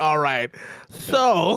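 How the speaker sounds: put-on valley girl manner. Quoting Fee, Fee's Valley girl HR voice. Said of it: "got into her Valley H R voice".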